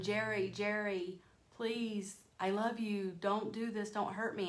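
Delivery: play-acted begging tone, mild half-yell. Retelling how the mother yelled at the father: imitating someone yelling a plea. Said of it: "she's yelling".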